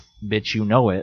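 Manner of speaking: normal talking voice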